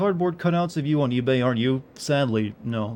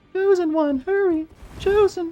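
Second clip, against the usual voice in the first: very high-pitched, slow character voice. Showing what he was just doing, Ling from Kung Pow impression. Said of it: "Ling from Kung Pao".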